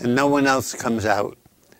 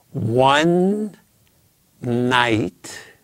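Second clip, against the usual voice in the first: ONE and NIGHT slow, stressed, split by pause. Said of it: "say it one more time slowly".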